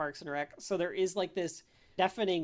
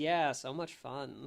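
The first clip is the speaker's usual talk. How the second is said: slow, flat, unimpressed, apathetic deadpan; 3 semitones lower than usual. Retelling how a very apathetic character answers another character; mock-apathetic deadpan. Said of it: "That with that tone".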